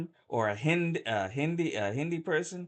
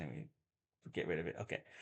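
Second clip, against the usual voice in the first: ordinary talk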